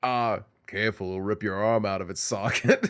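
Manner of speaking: very low, flat monotone. Retelling how he suddenly started sounding like Mike, Mike Ehrmantraut monotone voice. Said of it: "he did the the Mike monotone voice".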